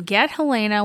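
ordinary talk

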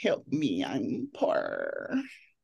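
very slow sing-song voice, stretched, swooping up and down. Retelling clicking the pay button for rent: imitating the girl from Bridesmaids. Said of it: "that girl from Bridesmaid popped up".

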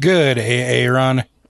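gravelly, rough, raspy voice. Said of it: "I like how you brought your gravelly voice in".

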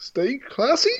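rising, question-like lift at the end of classy. Reading a sign-off as if off an autocue: rising question intonation. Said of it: "do it like that".

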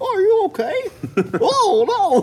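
very high, swooping, silly comedy character voice. Describing a little farm gardener character from a show, comedy character voice. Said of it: "he's just got like that comedy voice".

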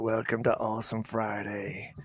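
soft, sunk-down, deep seductive bass voice. Imitating the other host's welcome line: put-on sexy low voice. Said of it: "That's my sexy voice".

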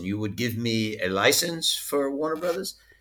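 put-on French accent in English. Retelling a conversation, quoting the other man's reply in his French accent. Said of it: "in his French accent".

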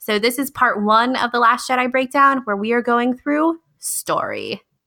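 on-air radio announcer voice. A podcast host introduces part one of an episode breakdown: radio announcer voice. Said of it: "that was so like radio announcery".

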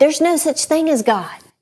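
put-on high, jeering, taunting yell. Telling a story, speaker re-enacts an atheist neighbor yelling across the yard. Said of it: "yell out across the yard".

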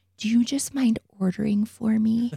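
playful mock whisper. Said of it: "I'm gonna whisper into his ear".

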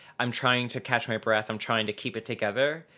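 ordinary talk

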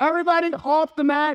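mock piercing scream, very high. A speaker retells the moment all hell broke loose in class, retelling a scream. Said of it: "I screamed".

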